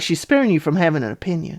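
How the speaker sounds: ordinary talk, nothing marked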